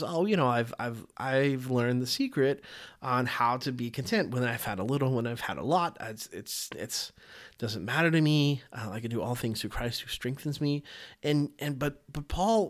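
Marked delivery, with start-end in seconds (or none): none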